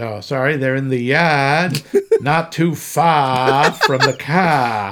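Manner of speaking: put-on Boston accent with the words drawn far out. Mimicking an actor trying to talk like a local, Roy Scheider's Boston accent attempt. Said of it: "doing a Boston accent is harder than it sounds".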